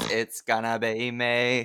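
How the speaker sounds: slow, flat, dragged-out delivery.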